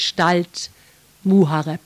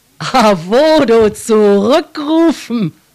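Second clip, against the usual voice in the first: loud, mocking, scornful, sneering scoff; 4 semitones higher, 7 dB louder than usual. Narrator reads the king repeating a plea to call back Arvodo; sneering. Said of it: "höhnte der König".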